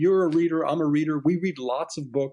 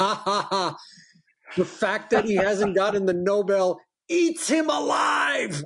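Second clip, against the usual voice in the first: exaggerated accent, mock-gleeful, with a chuckle; 12 semitones higher than usual. As if you're reading an email from a rival who is gleefully gloating, laughing as he relishes another man's misfortune.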